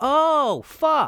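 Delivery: shrill, very high, loud outburst. Retrying the line to get the tone right: imitating Mel. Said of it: "I can do this better".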